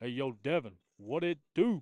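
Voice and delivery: loud, carrying, called-out voice. Pulling out an impression while watching a game: Devin Darnell voice. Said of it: "pull out that Devin Darnell voice".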